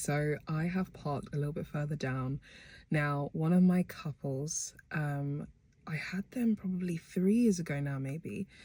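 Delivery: low, quiet voice. Parked down the street before dropping off a cake, keeping voice low. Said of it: "I'm keeping my voice low".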